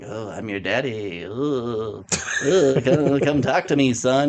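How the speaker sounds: slow, eerie, weird creature voice, long drawn-out oh. Recounting a scene, the speaker quotes a shadowy thing calling its son, weird voice. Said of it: "it's just in this weird voice".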